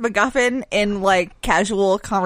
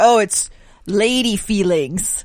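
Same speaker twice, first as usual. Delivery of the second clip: put-on very slow, dragged-out old man voice.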